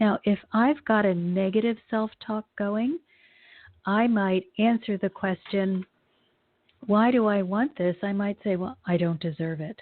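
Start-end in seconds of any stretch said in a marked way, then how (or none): 8.9-9.8 shut-down, closed-off, withdrawn tone. Showing negative self-talk about wanting something, in a closed tone. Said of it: "notice how my tone has changed. I'm going from really feeling really open to being very closed".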